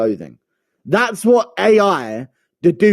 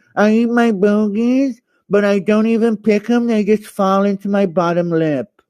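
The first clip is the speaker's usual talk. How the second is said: high, slow, drawn-out, exaggerated underbite voice; 6 semitones higher than usual. Talking about eating his bogies: Raul Rosas Jr. underbite impression. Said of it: "really accentuate the underbite".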